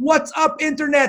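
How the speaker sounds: put-on very high, all-out, wild yell in German accent. Recalling a man who greeted him with his podcast opener: retelling a yell, crazy German accent. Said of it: "he yelled at the top of his lungs".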